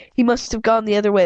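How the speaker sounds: ordinary delivery, nothing marked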